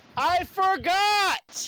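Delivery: very high, shrill yell with "forgot" drawn out. Answering the yelling at the table: yelling. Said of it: "Why are we yelling?".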